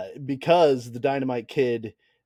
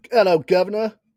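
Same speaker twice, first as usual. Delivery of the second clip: fake, put-on, pitched-up British accent; 7 semitones higher, 6 dB louder than usual. Podcast host, opening the show with his co-host, in a put-on british accent. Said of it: "I did a British thing".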